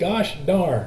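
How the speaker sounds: gosh and darn both hit hard, equally stressed. Spondaic foot example, kicking your toe: equal stress on gosh darn. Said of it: "accent, accent".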